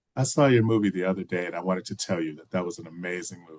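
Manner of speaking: usual speaking voice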